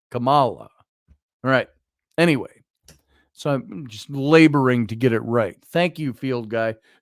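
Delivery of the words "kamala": name said with its middle syllable stressed. Working out how to pronounce a name: stress on mal in Kamala. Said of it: "The emphasis on the mal".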